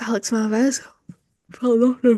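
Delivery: mid-yawn speech. Going through names and giving reactions, the speaker reads one while yawning. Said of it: "Oh, sorry, yawning".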